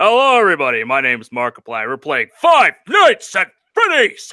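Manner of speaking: loud, belted youtuber-style intro delivery with swooping pitch. Imitating a YouTuber's video intro: Markiplier impression. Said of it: "when Markiplier hopped on".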